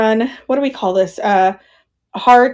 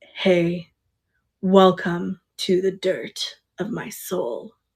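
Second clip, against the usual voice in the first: put-on very deep, hushed, very slow drawn-out voice; 3 semitones lower, 8 dB quieter than usual. Acting out how another man does his intro, unlike your own, imitating a very deep voice. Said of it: "Like he's like very deep".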